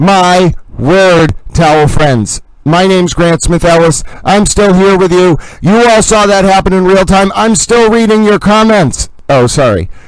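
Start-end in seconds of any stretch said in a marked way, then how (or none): 0.0-9.1 loud yelling, louder. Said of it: "I didn't mean to yell".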